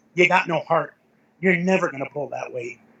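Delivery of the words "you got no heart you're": usual speaking voice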